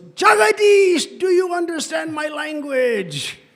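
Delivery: very loud, very high, eager and enthusiastic. Retelling how the teacher called out to a dozing student: imitating Guru Govinda Maharaj speaking loudly. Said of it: "speaking very enthusiastically and loudly".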